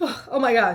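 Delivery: put-on hysterical crying. Retelling hearing a violin tune and starting to cry: imitating own hysterical crying. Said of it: "I start crying. I am hysterical".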